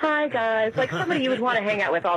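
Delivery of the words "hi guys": likeable, friendly, high radio-host voice. Calling in and praising a voice, imitating Mary's great voice. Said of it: "she just has this great voice, like".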